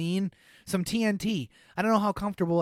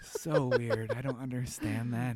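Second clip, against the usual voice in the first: plain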